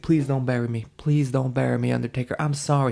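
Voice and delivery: mock pleading, desperate begging. Retelling a match where one wrestler pleads not to be buried: imitating aj styles begging. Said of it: "A J's begging".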